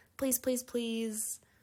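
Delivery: "please" strongly stressed. Demonstrating a casual request to a best friend; stress on please. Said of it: "maybe emphasis on the please".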